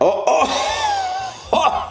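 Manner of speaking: very high, excited yelling shout. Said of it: "I'm, like, yelling in your face".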